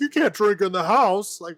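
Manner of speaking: indignant high yell. Retelling how the rich guy yelled at his guests: imitating someone yelling. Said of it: "he's yelling at him".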